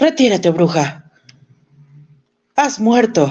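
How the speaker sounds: very high, terrified cry of pure terror. Reading a ghost story aloud, a man facing a ghost: terrified shout. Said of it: "temiendo por su vida, gritó".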